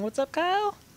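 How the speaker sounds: sudden squeaky high pitch. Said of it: "my voice got really high right there".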